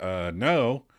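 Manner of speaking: ordinary delivery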